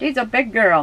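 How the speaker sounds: put-on high, cooing baby talk.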